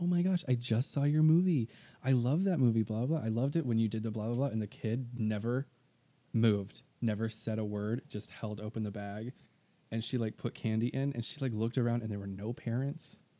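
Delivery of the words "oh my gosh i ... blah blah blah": effusive gushing tone. Retelling a roommate greeting a kid dressed as Sam: imitating Kimber in gushing Disney mode. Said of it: "she went in total, like, Disney mode".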